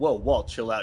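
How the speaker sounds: ordinary talk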